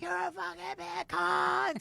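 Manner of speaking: very high, hoarse, stretched-out scream. Retelling a comedian calling someone on stage by phone: imitating Sam Kinison screaming. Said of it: "he's screaming".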